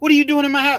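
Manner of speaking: very high, shrill, frantic, panicked outburst. Telling a story, voicing a woman who finds a stranger in her house: imitating a frantic woman. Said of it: "She's frantic".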